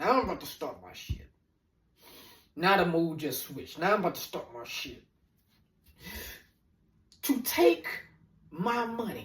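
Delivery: mildly angry, annoyance building, getting worked up. Telling how someone took twelve hundred dollars, getting a little angry. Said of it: "now I'm starting to get a little angry".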